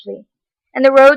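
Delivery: plain reading voice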